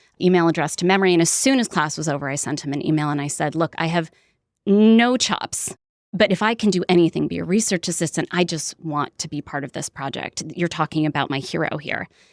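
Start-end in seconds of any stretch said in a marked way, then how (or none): none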